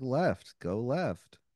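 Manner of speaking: speaking while biting back barely held-in laughter. Voicing a character giving directions to a player, trying not to laugh. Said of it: "clearly trying not to laugh".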